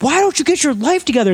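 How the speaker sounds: very high, hard yelling. Imitating a TV host who yells at people: imitating Steve Wilkos yelling. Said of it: "All he does is yell at people".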